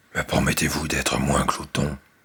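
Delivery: softened giant voice. Reading a story aloud, the giant now speaks: giant speaking more softly. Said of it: "dit le géant d'une voix plus douce".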